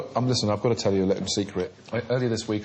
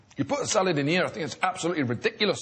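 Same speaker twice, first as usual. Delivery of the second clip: put-on higher-pitched Geordie accent; 8 semitones higher than usual. Trading impressions with others, Duncan Bannatyne impression that sounds Geordie. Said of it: "I didn't know Duncan was a Geordie".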